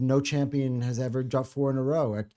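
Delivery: ordinary delivery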